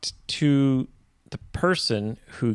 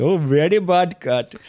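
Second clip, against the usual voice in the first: put-on Indian accent, pitched higher; 5 semitones higher, 4 dB louder than usual. Trying out different accents while scolding the cats, now a put-on Indian accent. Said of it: "Now I prefer Indian".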